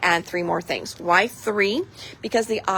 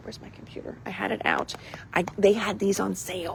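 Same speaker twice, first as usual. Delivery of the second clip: soft, hushed, low whispered voice; 7 dB quieter than usual. Presenting the deal of the day while looking for a computer, whispering. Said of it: "I don't know why I'm whispering".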